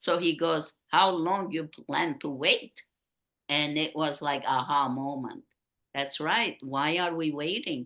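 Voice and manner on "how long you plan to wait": put-on Viennese accent. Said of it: "with his Viennese accent".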